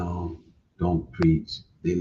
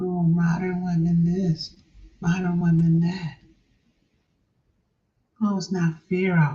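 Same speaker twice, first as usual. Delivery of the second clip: bad mocking complaining impression, much higher; 12 semitones higher than usual. Criticizing the loudest manosphere voices, doing a horrible impression of complainers. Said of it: "I know that's a horrible impression".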